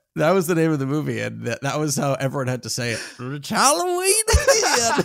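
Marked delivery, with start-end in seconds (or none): 3.2-5.1 put-on high, swooping old-person voice. Acting out how everyone had to say the movie title, old neighbor voice. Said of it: "Are you like the old neighbor next door?".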